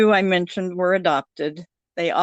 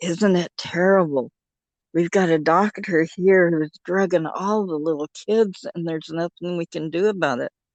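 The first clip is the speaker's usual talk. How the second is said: imitated, acted hushed whisper. Retelling a phone call where a woman cupped the phone: imitating someone whispering. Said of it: "she lowered her voice to a whisper".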